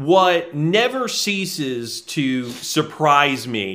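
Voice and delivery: sarcastic, mock-sincere tone.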